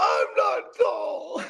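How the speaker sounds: mock tearful sobbing, high crying whimper. Retelling how she cried in front of the pantry: imitating someone crying. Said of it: "she was crying in front of the cabinet".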